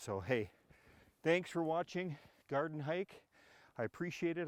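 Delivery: huffing and puffing. Thanking viewers at the end of a garden video while trudging through snow, huffing and puffing. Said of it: "I'm huffing and puffing a little here".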